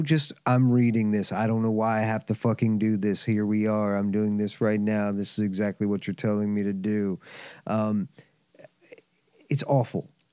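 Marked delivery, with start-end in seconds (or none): 0.5-7.2 low, flat, uninterested droning monotone. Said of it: "it's so disinterested".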